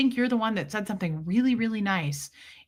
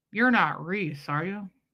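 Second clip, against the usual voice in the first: put-on talking out of one side of the mouth; 2 semitones lower than usual. Retelling how a stranger who recognized them spoke: imitating side-of-mouth talking. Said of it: "side of her mouth talk".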